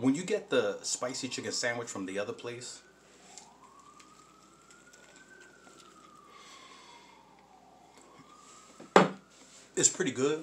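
very high-pitched speech through a full mouth, chewing. Eating on camera while talking to viewers, talking with mouth full. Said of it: "I'm talking with my mouth full".

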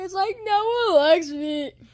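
tearful, sobbing, crying voice.

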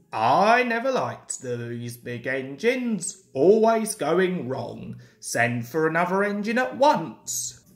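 ordinary delivery, nothing marked

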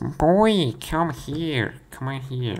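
loud, high, badly put-on motherly voice. Narrator reading the story voices the mom calling from the kitchen, mom voice. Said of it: "Should I make a mom voice with this one?".

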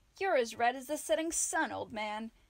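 loud, playful, needling teasing. North addresses the blushing Almric, North teasing. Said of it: "North teased".

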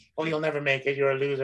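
ordinary delivery

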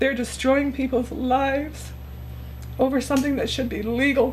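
speaking through tears. Upset speaker talking about people being arrested, crying while speaking. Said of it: "I'm crying because this is upsetting".

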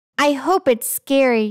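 ordinary delivery

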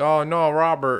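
mock yelling. Describing a favourite part, acting out a man and woman yelling. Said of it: "are yelling like".

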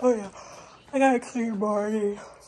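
spoken through a big, very loud yawn. Showing friends something, the speaker keeps talking through a yawn. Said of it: "I'm sorry, I'm yawning".

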